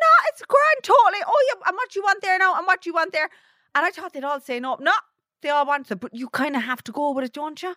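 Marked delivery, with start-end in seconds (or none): 0.0-3.3 very high, loud, mock gushing hostess voice. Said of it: "I was like".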